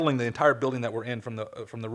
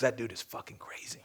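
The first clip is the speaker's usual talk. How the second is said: soft, hushed, confiding whisper; 8 dB quieter than usual. Speaker recalling what a man whispered to him up close, retelling a whisper. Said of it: "he gets close to me and he whispers".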